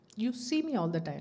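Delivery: normal talking voice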